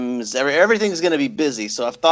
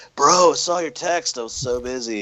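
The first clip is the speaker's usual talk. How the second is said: slow California surfer dude drawl. Retelling what the agent said after ignoring texts: imitating a california surfer voice. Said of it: "Sounds like a surfer from California with your impression".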